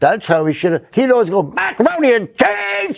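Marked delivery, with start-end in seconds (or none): 1.4-3.0 mock-bitter angry scream, much higher and slower. Recounting a man's bitter joke line, imitating his bitter angry scream. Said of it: "because he was bitter".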